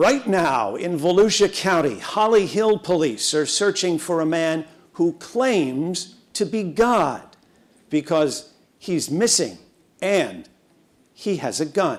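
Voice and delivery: very dramatic, theatrical news anchor voice. Recalling their report intro from the anchor desk, use a dramatic news anchor voice. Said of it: "in my very dramatic anchor voice".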